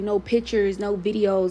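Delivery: ordinary talk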